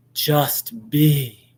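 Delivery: weird, solemn, profound-sounding guru teacher intonation. Mocking how Neo-Advaita teachers give their teaching, in their weird voice. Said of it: "they have a weird voice".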